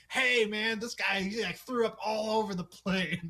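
very high loud yell. Recounting a scene, the speaker retells the pilot yelling at a man: retelling the pilot's yell. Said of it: "He's just yelling at him like".

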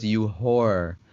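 low, flat, deadpan monotone with no inflection. Retelling what Kim says while walking away, in a flat monotone. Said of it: "Kim is walking away. She goes".

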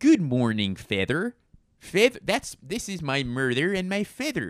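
put-on Midwestern accent. Speaker doing a run of accents, Midwestern accent. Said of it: "That's my Midwestern accent".

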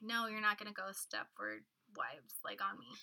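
ordinary delivery

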